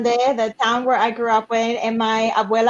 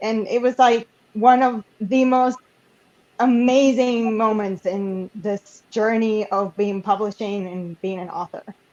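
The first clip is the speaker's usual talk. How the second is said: emotional, teary, choked-up, close to tears. Recalling giving the book to her abuela, teary-eyed, emotional. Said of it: "I'm getting all teary-eyed".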